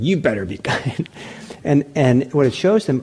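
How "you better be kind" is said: cold, really harsh, stern tone. Imitating someone doing loving kindness practice: imitating a harsh tone. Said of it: "the tone of voice is really harsh".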